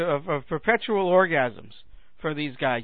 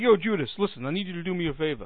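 put-on Brooklyn-accented delivery; 4 dB quieter than usual. Joking that Jesus had a Brooklyn accent, speaking to Judas: Jesus with a Brooklyn accent. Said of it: "Jesus had a Brooklyn accent".

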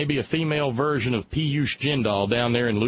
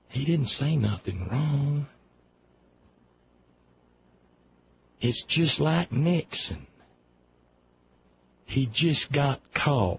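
furtive, dropped-down, lowered, hushed voice; 3 semitones higher than usual. Commentator quoting what people in the south are saying: retelling in a lowered, hushed voice. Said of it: "in a lowered, hushed voice".

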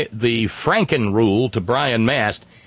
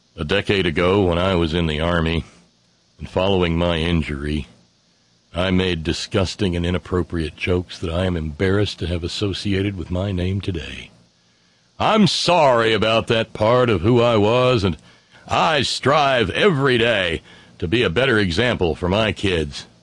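low, pious, penitent tone laid on thick; 5 semitones lower than usual. Quoting Brian Mast's answer when asked about his posts, mock-pious Brian Mast voice. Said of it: "in his most pious voice said".

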